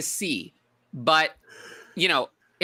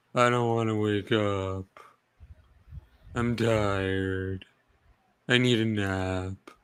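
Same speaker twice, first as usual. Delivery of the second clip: very slow, dragging donkey voice, "nap" stretched long; 7 semitones lower than usual. After Tyler's Eeyore voice is praised, the speaker shows their own Eeyore voice. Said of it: "That's my Eeyore voice".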